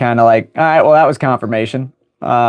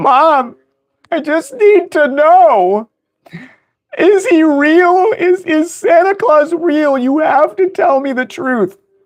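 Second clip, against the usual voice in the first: mock very high, slow tearful crying, "know" drawn out. Retelling a younger sister asking about santa: imitating a crying sister.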